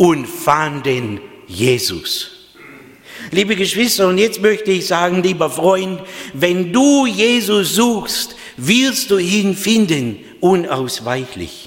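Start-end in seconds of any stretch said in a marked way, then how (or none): 0.0-2.3 "fanden" heavily stressed. Reading a bible passage to the congregation, strong stress on fanden. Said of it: "jetzt betone ich dieses Wort".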